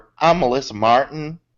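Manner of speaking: put-on twang. Joking about changing a last name, saying it with put-on twang. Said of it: "And say it with a twang".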